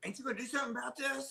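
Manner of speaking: high-pitched, mocking put-on voice. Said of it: "she'd go".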